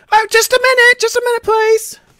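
piercing female voice. Narrating a scene, the storyteller voices someone heard from the back: shrill female voice. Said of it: "you guys hear a shrill female voice".

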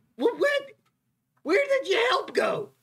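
very high, squeaky character voice. In a role-playing game, speaking as the lighthouse keeper to the players: lighthouse keeper character voice. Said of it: "[name] is also the keeper of the lighthouse".

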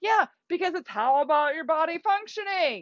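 high, heated, fired-up, worked-up yelling. Venting about spinach advice for PCOS, the speaker gets worked up and yells. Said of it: "I'm getting like really worked up and I'm yelling".

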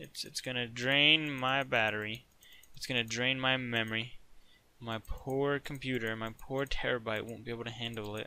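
ordinary delivery

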